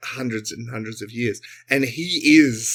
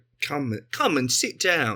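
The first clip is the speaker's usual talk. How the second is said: put-on inviting, beckoning voice with faintly familiar English accent; 3 semitones higher, 3 dB quieter than usual. Voicing a robed figure who beckons the characters in: Simon Cowell voice with English accent. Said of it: "He's got an English accent".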